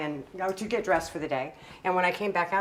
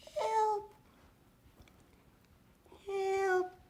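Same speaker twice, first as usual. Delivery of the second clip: put-on tiny, very high baby voice, muffled; 14 semitones higher, 4 dB quieter than usual. Describing a voice heard under a pile of blankets: baby Skip voice. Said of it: "little baby voice".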